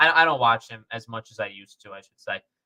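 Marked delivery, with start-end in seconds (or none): none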